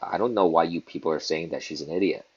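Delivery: ordinary talk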